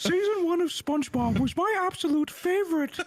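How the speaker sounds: silly put-on voice. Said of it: "that doesn't sound like swagger".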